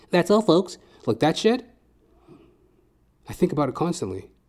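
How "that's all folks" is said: high-pitched, funny cartoon voice. Quoting a cartoon sign-off: Porky Pig voice. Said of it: "That's what made Porky Pig so funny".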